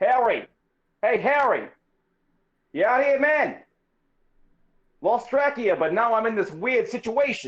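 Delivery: high, searching shout, calling out. A player character calls out for a lost companion, harry; calling out. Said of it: "your calling out".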